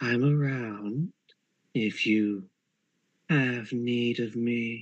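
character voice in a whisper. Narrator answers a player asking about Autumn Fright, in Autumn Fright's whispering voice. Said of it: "you just hear the whispering voice".

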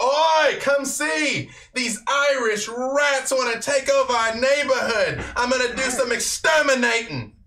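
very high-pitched, loud yell. Voicing a thug calling to the street: yelling out to everybody. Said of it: "he's yelling, like, out for everybody".

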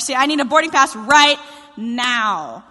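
frantic, urgent, loud, frenzied, with stretched "now". Retelling bursting into the ticket office for a boarding pass, mock-frenzied demand. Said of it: "in a very frenzied and very unchrist-like manner".

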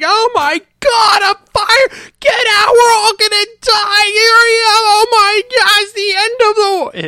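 all-out panic, shrieking, very loud and high-pitched. Retelling how a man reacted on seeing a fire, imitating someone freaking out. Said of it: "he just starts freaking out".

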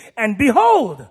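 behold delivered with sudden, startled surprise. Showing a learner how to read a passage aloud, surprised tone on behold. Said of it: "it's a surprise. It should be read like this".

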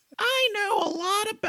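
squeaky, high-pitched, slow voice. Speaker trying out a voice for a character confronting Randall: Mickey Mouse voice. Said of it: "that's Mickey Mouse".

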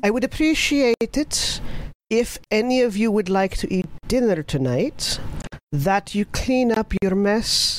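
feminine dwarf voice. A dwarf speaks from the other side of the kitchen, quiet feminine dwarven voice. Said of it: "A very quiet and yet eminently listenable feminine dwarven voice".

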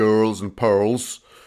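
Swindon accent. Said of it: "Swindonian-accented girls and pearls. Oh, sorry about the accent there".

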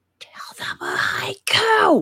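loud, theatrical stage whisper meant to carry. During a game, a player whispers so Asher can hear: stage whisper. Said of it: "I'm just going to whisper, like stage whisper".

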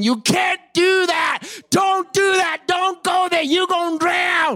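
put-on voices of several people hollering at once, pitched high. Retelling a sermon story, acting out people yelling warnings at Peter: imitating people yelling. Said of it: "That's people yelling".

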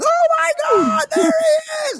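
very high, shrill, acted thrilled shriek. Recalling a kid spotting a man dressed as Santa, imitating her excited scream. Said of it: "And she was screaming".

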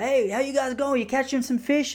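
acted-out, very high, hollered call. Retelling how a stranger called out to them in their canoe: imitating someone yelling out. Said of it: "he yelled out to us".

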